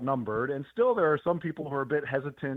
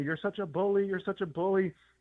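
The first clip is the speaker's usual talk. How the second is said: put-on accusing yelling, repeated; 6 semitones higher than usual. Retelling how protesters reacted afterwards: imitating protesters yelling. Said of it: "they were just yelling at me".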